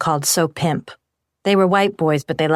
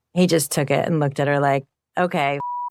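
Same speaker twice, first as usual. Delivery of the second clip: ordinary talk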